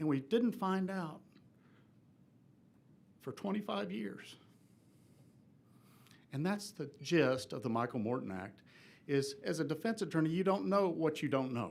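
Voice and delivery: emotional, choked-up voice. Speaking as a defense attorney against modifying the act: emotional. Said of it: "I'm sorry for being emotional today".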